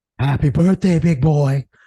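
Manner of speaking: seductive tone. Speaker wishes Brandon a happy birthday in a practiced sultry voice. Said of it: "my real sultry voice".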